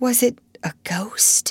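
trembling, fearful, quaking voice, high and slow. A narrator reads one girl's question to another, quaking. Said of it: "quaked Ermengarde".

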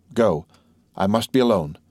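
usual speaking voice

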